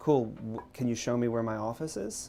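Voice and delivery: normal talking voice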